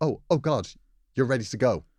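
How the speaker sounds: mock-nervous stammering, put-on stutter. Retelling how a man reacted on seeing her in the driveway, imitating a nervous stutter. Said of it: "said in a nervous voice and stuttered".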